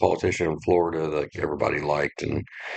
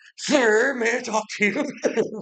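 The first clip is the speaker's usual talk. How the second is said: mock pleading, higher. Retelling how a player begs after being downed: imitating someone begging. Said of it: "He's, like, begging".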